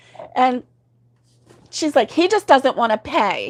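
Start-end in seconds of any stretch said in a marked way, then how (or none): 2.1-3.5 put-on angry woman voice, higher pitch. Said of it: "And she was so hot".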